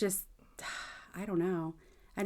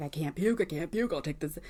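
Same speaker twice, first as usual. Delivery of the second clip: put-on, frantic, panicky, repeated self-talk; 3 semitones lower than usual. Retelling own reaction when the kids get stomach bugs: imitating own panic. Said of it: "I start panicking".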